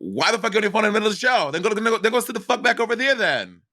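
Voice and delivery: put-on brash New York accent, pitched very high. Imitating a performer scolding someone on a phone at a show: New York accent. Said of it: "Why'd you give her a New York accent?".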